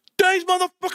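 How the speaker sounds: acted out, very high, shrieking mad yell. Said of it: "Who are you yelling at?".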